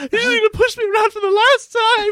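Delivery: high-pitched meltdown outburst on one flat note. Retelling a scene where Number Two breaks down: imitating Number Two's meltdown. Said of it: "having a meltdown about Doctor Evil".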